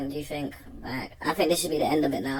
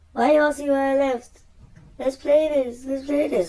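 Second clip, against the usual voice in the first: very high-pitched, raised, nervy, nervous voice; 11 semitones higher, 7 dB louder than usual. Replaying another man's words to viewers, imitating his high-pitched voice. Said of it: "High pitch".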